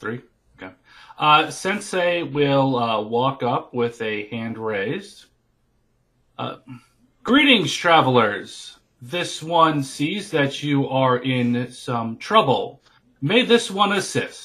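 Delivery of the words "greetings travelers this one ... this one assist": plain, neutral delivery. Greeting travelers with a stuck cart as a character: speaking up loudly. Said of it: "as you speak up loudly".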